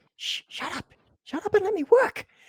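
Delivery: tiny, very faint, far-off, very high voice. Narrator voicing a second distant voice that answers the first, in a very faint voice. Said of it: "two very faint voices that you can hear just at the edge of your hearing".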